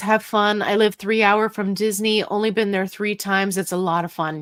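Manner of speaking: normal talking voice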